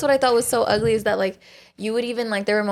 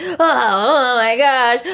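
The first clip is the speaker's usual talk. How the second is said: mock tortured cry of pain, louder; 3 semitones higher, 6 dB louder than usual. Mocking how men react when hurt: imitating men screaming in pain. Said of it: "act like they're getting tortured".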